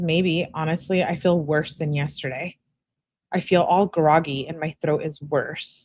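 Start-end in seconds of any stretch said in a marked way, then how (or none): none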